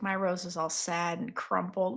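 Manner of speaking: mock sulky, moody, soft, mopey sad voice. Retelling a character's line about her crumpled rose: imitating someone sad and moody. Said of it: "I is super in her feels right now".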